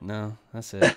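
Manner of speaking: somewhat deflated, disappointed, let-down tone. Mimicking another speaker's answer to tease them: imitating James sounding disappointed. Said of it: "you sounded kinda disappointed there. You're like".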